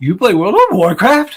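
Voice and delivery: put-on cracking, crackly teenage boy voice, high and loud. Retelling a teen GameStop clerk answering an old lady, crackly little teenage voice. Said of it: "in his crackly little teenage voice".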